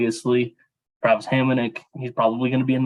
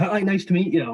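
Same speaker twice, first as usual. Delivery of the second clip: mock, high-pitched yelling; 7 semitones higher than usual. Retelling a team video of a greeting, imitating DJ Smith yelling. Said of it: "he's yelling at him like".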